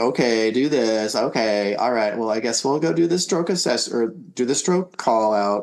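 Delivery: put-on doubtful, skeptical, unconvinced tone. Retelling how the nurse sounded at the stroke assessment: imitating a skeptical nurse. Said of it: "I could hear the skepticism in the nurse's voice".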